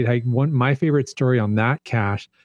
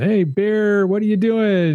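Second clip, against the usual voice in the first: high, drawn-out hollering yell; 8 semitones higher than usual. Retelling making noise at a possible bear on the trail: retelling a yell. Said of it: "making lots of noise and yelling".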